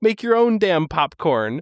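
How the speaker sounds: petulant little yelling outburst. Recounting a movie scene where a man yells at everyone, retelling a yell. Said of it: "and he yells at everyone else".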